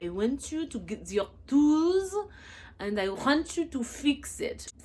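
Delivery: bad fake French accent, high and angry. Imitating a random angry Frenchman making his demands, terrible fake French accent, mock-angry. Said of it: "Please forgive my terrible accent ... a random angry Frenchman, and his demands".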